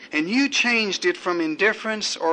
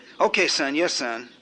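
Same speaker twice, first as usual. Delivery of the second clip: usual speaking voice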